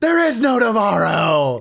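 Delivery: loud, high-pitched screaming outburst. Recalling the guy in the hotel room next door, imitating someone screaming. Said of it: "hotel room next to us screaming".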